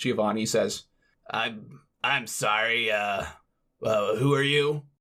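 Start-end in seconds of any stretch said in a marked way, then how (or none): 1.3-4.8 put-on grizzled, weathered old man voice. Voicing the man at the desk who questions Giovanni, in a grizzled old man voice. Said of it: "this grizzled old man".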